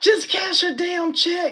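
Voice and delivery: high, fed-up, exasperated yell. Recalling watching a bank scene on TV, retelling a yell at the TV. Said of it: "I was yelling at the TV like".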